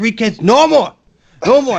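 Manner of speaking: acted, very high, shrill, furious yelling outburst. Retelling what an old guy said about his kids: imitating Ozdegon furious. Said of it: "he's just mad as fuck".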